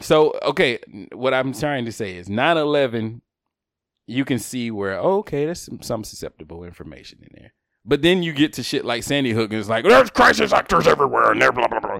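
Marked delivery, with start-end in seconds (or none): 9.8-12.0 rough and loud voice. Imitating Alex talking about crisis actors: Alex impression, sounds like Vince McMahon. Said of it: "You still sound like Vince McMahon".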